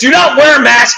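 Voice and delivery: urgent, emphatic, insistent scream. Recounting what the speaker yelled back in March: retelling a scream. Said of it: "I was screaming at the top of my lungs".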